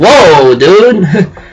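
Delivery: sarcastic, mock surprised amazement. Recalling own reaction to a story reveal: sarcastic fake surprise. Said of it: "being sarcastic right there".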